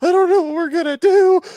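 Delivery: hyperventilating panic, very high and loud. Retelling a stranded driver hyperventilating after going off the road: imitating someone panicking, hyperventilating. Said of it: "She's hyperventilating, panicking".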